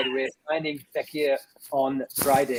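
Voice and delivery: ordinary talk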